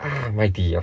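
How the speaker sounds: ordinary delivery, nothing marked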